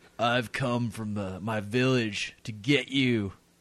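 a little bit raspy voice. Describing a movie scene, the speaker does a slightly raspy Steven Seagal impression. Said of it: "He's a little bit raspy".

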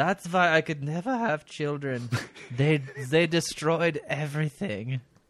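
slow, put-on woman's voice. Quoting a woman's own words, imitating her voice. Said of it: "so I'll do it in her voice".

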